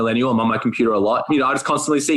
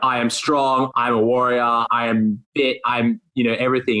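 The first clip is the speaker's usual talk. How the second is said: ordinary talk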